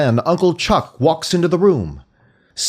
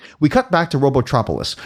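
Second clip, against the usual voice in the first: ordinary talk, nothing marked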